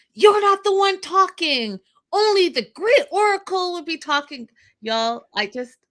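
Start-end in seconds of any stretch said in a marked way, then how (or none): 0.2-4.5 very high, piercing, shrill scream. Retelling a scene where a man shouts at someone: imitating him screaming. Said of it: "and he screams".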